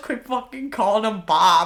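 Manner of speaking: mock-angry, acted-out angry voice. Speaker retells someone getting mad at a guy, acting out getting mad. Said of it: "even getting mad".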